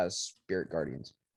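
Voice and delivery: ordinary talk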